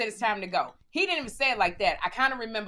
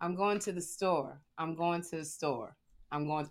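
deep, relaxed, pushed-down low voice; 5 semitones lower, 8 dB quieter than usual. Retelling rehearsing in the mirror: imitating own practice, lowered voice. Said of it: "I practiced lowering my voice".

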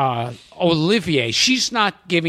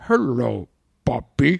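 put-on sinister voice, lower-pitched; 3 semitones lower than usual. Retelling a film line said with an evil smile: Gregory Peck evil smile voice. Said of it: "an evil smile on his face".

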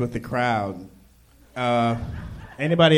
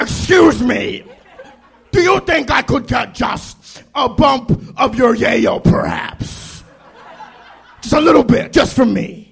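very high, loud, swooping villain voice; 11 semitones higher, 8 dB louder than usual.

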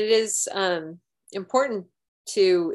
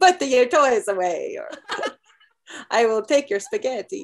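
put-on Italian accent with a scolding tone; 4 semitones higher than usual. Speaker imagines yelling at the kids next time: italian accent. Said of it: "I'm gonna sound like an Italian".

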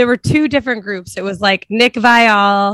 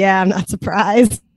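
put-on, muttered aside voice. Retelling what Ivan said on the way out: imitating Ivan muttering under his breath. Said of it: "It's like, under his breath".

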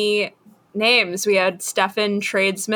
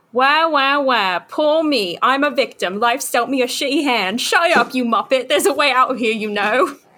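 put-on Cockney accent in a puppet voice; 3 semitones higher than usual. Voicing a talking hand that answers the stranded man: cockney accent. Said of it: "doing a Cockneyed accent".

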